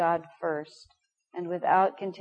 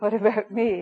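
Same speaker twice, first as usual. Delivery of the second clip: faux-serious, mocking, jokingly serious, raised voice; 3 semitones higher, 6 dB louder than usual. Saying the phrase to oneself as a joke: mock-serious, making fun of it. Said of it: "unable to say the sentence in a normal manner".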